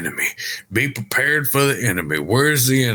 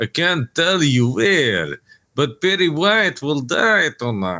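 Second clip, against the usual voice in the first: heavy, full-on vampire count voice; 3 semitones higher than usual. Retelling what a caller said on the phone, in a Dracula voice. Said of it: "he's doing a very Dracula voice".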